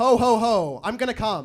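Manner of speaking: very loud, slow, drawn-out, booming put-on voice. Doing an impression of Santa Claus having sex, in a Santa Claus voice. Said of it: "this is my impression of Santa Claus having sex".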